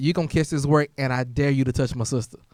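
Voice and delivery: normal talking voice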